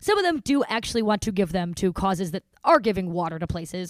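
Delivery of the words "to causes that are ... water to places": ordinary talk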